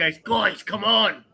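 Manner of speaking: mock loud whisper-shout. Telling how they called the crew to come in, retelling a whisper-yell. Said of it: "whisper, yell".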